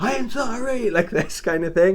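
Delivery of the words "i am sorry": put-on shrill scream, very high. Retelling how a man in the canal screamed an apology: imitating a man screaming. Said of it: "And he screamed".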